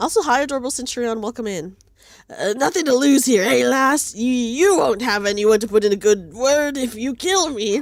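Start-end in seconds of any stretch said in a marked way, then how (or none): 2.6-7.8 put-on swashbuckling sea-dog pirate voice. Speaking in character to the Centurion, in a pirate voice. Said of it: "I wish I could do a better pirate voice".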